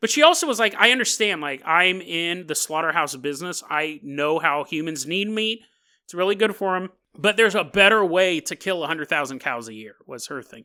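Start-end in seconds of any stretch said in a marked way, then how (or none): none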